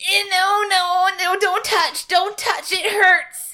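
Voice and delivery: high, drawn-out fake pain. Playing a character faking an arm injury: faking pain. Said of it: "I wanna make it look like I hurt".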